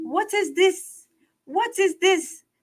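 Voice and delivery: put-on Haitian accent, very high-pitched. Asking everybody about something still on a woman's YouTube page, put-on Haitian accent. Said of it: "in my Haitian voice".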